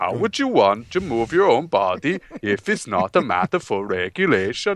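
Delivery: put-on Swedish accent. Reading out a quote from a news story, swedish accent. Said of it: "I should do a Swedish accent".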